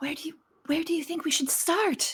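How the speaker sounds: high-pitched stage whisper. Voicing a character who asks the group where to start: whispering in character. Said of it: "she's gonna whisper".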